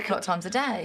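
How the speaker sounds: ordinary talk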